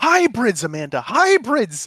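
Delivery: put-on excited shout. Retelling blurting a word out to amanda: imitating own loud excited shout. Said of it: "very loud and very annoyingly shouted at me".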